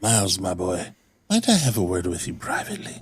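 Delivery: low whisper. In a tabletop game, speaking in character privately to miles: whispering. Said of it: "I'm going to whisper to him".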